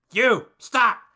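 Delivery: high, loud, birdlike piping call. Voicing a squawking bird creature that orders the travellers to stop: bird creature piping up. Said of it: "one of them just kinda pipes up".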